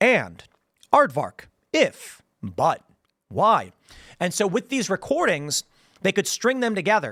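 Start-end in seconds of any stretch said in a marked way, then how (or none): 0.0-3.7 very slow, sing-song, one word at a time. Explaining early automated voice systems, reading isolated single words. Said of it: "They'd sit down and go".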